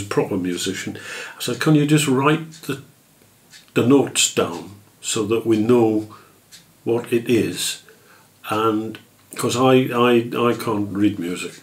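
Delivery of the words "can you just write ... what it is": ordinary delivery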